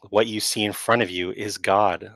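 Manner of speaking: plain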